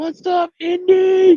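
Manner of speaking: very high, crazy squelchy squeal, drawn out. Greeting someone who just showed up: put-on crazy squelch voice. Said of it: "she got that crazy squelch voice out of me".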